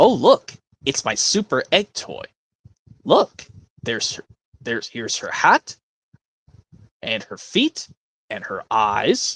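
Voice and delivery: improvised swooping cartoon character voice. Filling time alone for the audience, doing a little improvised impression. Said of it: "I'm just gonna do a little impression by myself".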